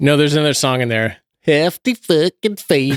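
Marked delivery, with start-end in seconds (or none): 1.4-3.0 put-on super thick, broad Southern American accent, laid on. Quoting a line from the puppet movie Team America: super Southern accent. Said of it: "Super Southern accent".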